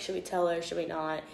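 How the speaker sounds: ordinary talk, nothing marked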